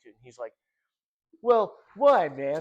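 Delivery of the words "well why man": blunt, very loud and high-pitched. Retelling a talk with Kurt and doing his reply: Kurt impression. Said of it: "I'll try to do my best impression of him".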